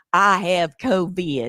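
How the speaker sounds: put-on southern Alabama accent. Retelling bad news a woman gave, the speaker quotes her in Alabama accent. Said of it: "she said it in her Alabama accent".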